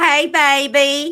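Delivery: put-on high, loud woman's voice, "baby" stretched long. Repeating a requested line, imitating a woman's voice. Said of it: "You sound identical to her".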